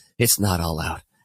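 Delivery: embarrassed, sheepish, awkward little voice. Retelling how a friend spoke after leaving the bathroom: imitating a sheepish friend. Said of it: "he kinda sheepishly goes".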